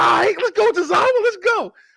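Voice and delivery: play-acted, very high, rising, excited hyped cheering. Retelling watching the wrestler fight back: retelling own cheering. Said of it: "I was rooting for him".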